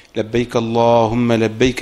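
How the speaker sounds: ordinary talk, nothing marked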